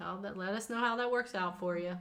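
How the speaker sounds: condescending, patronizing, talking-down tone. Addressing listeners who want revenge on an ex: condescending tone. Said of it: "You said that so condescendingly".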